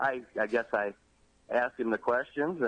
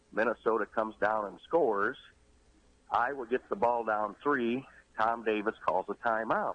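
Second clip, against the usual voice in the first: ordinary talk, nothing marked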